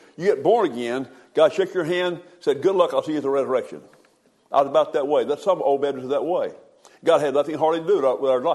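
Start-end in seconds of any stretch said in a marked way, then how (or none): 2.6-3.8 tongue-in-cheek, put-on sarcastic tone. Retelling an old belief, quoting God after a handshake: put-on sarcastic tone. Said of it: "I'm gonna be a little bit sarcastic here".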